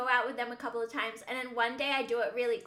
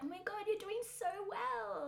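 put-on soft, high-pitched baby voice; 8 semitones higher, 8 dB quieter than usual. Mimicking people who praise the speaker's progress, in a baby voice. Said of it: "they say it in a baby voice".

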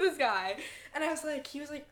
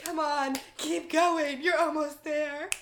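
loud fitness instructor voice, egging on and coaching; 2 semitones higher, 5 dB louder than usual. Right after teasing how someone sounds, mimicking a Soul Strike instructor voice. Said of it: "Why do you sound like a Soul Strike instructor right now?".

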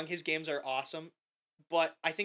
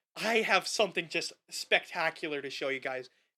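normal talking voice

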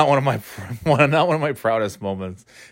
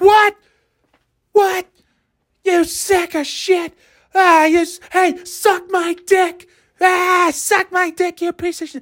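screaming, much higher-pitched and slower. Retelling the moment the ride shut down before their turn, retelling own screaming. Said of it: "And I'm screaming".

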